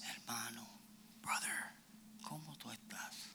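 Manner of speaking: soft, breathy, barely audible whisper. Showing the audience how they speak to someone: soft whisper. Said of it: "le hablan así".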